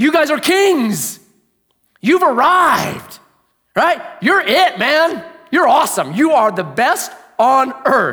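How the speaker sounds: sarcastic, mock-admiring tone. Explaining how Paul mocks his readers: imitating Paul's sarcasm. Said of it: "This is called sarcasm".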